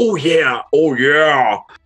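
put-on dirty, aggressive voice. Answering what the worm said coming through the wall: mock-aggressive 'oh yeah'. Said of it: "It sounds dirtier, more aggressive".

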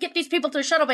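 acted, mild, half-yelled delivery. Retelling how an officer on a screen gave an order: imitating someone yelling. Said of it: "yelling at me".

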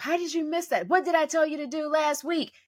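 put-on sideline coach's berating yell. Retelling what a refereed coach yells at the kids: imitating a coach yelling at kids. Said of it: "They're just yelling".

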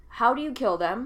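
plain

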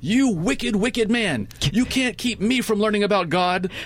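put-on very high, shrill, accusing kid's yell. Retelling how a young boy at the park door shouted at him, retelling a shout. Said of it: "he's shouting at me".

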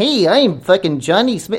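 stock put-on dubbed-style voice.

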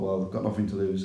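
ordinary talk, nothing marked

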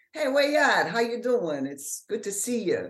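put-on New Orleans accent. Showing someone how people in New Orleans sound, in a New Orleans accent. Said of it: "New Orleans is more like".

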